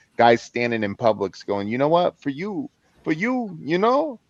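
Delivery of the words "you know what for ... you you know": heavy put-on Italian accent, pitched up. Retelling what a seller from the bronx said: imitating a thick italian accent. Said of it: "thick Italian accent".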